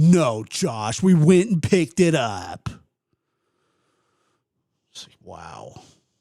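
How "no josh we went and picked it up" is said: slow, dead-serious, deadpan sarcastic delivery. Telling a story, acting out a man's answer to Josh's question, retelling a deadpan sarcastic reply. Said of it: "dead serious with the most sarcastic shit".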